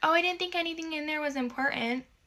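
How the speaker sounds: high-pitched, dismissive, brushing-off tone. Retelling overhearing her stepmom talk about the backpacks, imitating her stepmom's excuse. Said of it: "I can hear her being like".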